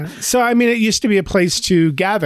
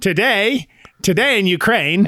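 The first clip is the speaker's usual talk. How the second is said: slow, vintage newsreel announcer voice; 4 semitones higher than usual. Joking about pitching a straight newsreel: old newsreel announcer voice. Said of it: "Have someone talking like this".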